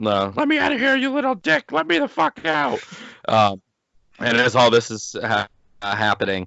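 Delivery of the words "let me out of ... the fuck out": play-acted very high, enraged, swooping screaming fit. Retelling a movie scene, mock-furious Chucky shout. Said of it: "he gets all pissed".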